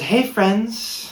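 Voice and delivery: very high, put-on camp, effeminate voice.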